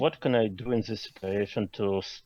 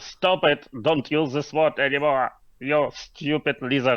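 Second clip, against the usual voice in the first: full high-pitched yell, hollered; 6 semitones higher, 3 dB louder than usual. Playing a character trying to stop an attacker: shouting at the lizard. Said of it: "I shout to him".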